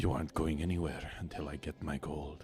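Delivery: deep, rough, gruff, slightly menacing voice. A stranger's hand lands on Frederick's shoulder; rough, deep, slightly menacing voice. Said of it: "in a kind of deep, kind of slightly menacing tone".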